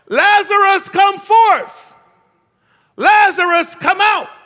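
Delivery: very loud, very high, booming, drawn-out cry. Speaker acting out someone's words from a story, retelling a loud cry. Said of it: "he says this real loud".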